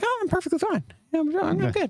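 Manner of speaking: very high-pitched voice, way up top. Retelling own reply to people asking if okay, imitating own high-pitched voice. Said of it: "I do the high-pitched voice".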